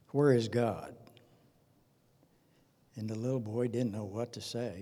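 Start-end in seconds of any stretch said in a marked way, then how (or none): 0.2-1.0 mock severe, demanding, very stern voice. Telling a story, the speaker acts out the pastor questioning a little boy, imitating a stern pastor. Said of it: "very sternly".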